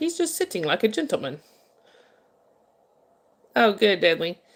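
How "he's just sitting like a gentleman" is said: put-on English narrator-style accent. Speaker quotes the guy narrating a bear video, imitating an english accent. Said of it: "the guy had an English accent".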